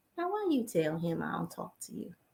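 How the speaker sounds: barely-there, very quiet, faint, low voice. Retelling a voice heard while running bath water: very faint voice. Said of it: "this very faint voice said".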